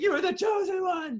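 very high shout, fighting back tears. Describing a film scene where one character yells at another: retelling a tearful yell. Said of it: "him yelling at him, like basically like fighting back tears".

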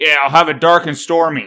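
imitated American accent. Retelling what a guy at a pub bar ordered: imitating an American accent. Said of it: "with an American accent and says".

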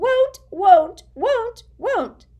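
very shrill, very loud, repeated croaking elf voice. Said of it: "Creature's continued croaks of won't".

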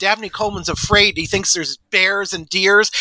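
normal talking voice

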